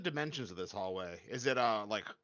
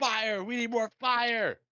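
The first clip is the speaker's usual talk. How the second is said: very high-pitched, loud battle yell in character voice; 11 semitones higher, 6 dB louder than usual. Standing next to Riku with shield up, calling to him: in-character yelling. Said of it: "Stop yelling".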